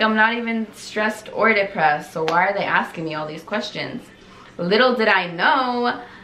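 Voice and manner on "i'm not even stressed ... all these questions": plain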